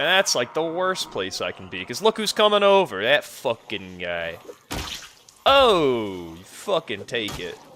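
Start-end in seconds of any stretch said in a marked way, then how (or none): 1.8-7.6 put-on Italian-American accented speech. Fighting zombies in a game, slipping into a Sopranos-style Italian-American accent. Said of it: "I get really Italian when I fight zombies".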